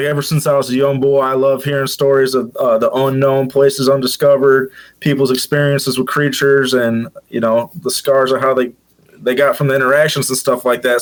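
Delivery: ordinary talk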